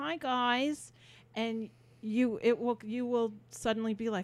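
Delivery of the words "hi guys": put-on nasal voice, higher. Imitating a famous performer's greeting: nasal voice. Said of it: "known for her nasal voice where she says".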